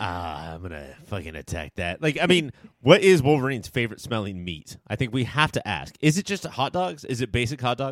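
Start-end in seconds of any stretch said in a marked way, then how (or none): 0.0-2.0 put-on hungry monster voice, lower and quieter. Joining in, picturing a character talking to meat: Wolverine talking to his meat. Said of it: "This is how I picture Wolverine always".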